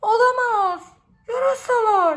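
very loud, full-throated, high-pitched yell. Narrating a children's story, Arni's line at the cave, shouting. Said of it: "Diye bağırdı Arni".

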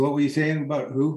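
plain

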